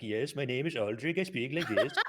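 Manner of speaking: attempted Nordic accent. Showing the impression he was practicing earlier, in an attempted Nordic accent. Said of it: "I was trying to do like Nordic".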